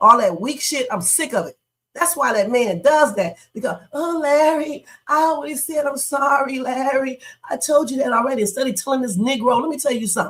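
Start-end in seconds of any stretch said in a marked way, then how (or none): 3.9-8.4 weepy, whiny voice, close to tears. Mocking a wife's apology to her husband: mock whining, about to cry. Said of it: "All that damn whining, sounding like she's about to cry".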